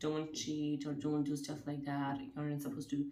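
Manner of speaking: normal talking voice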